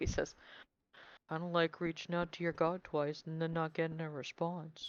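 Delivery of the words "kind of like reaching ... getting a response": hushed mutter under the breath. Voicing a character close enough to be overheard: muttering under his breath. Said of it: "mutters under his breath".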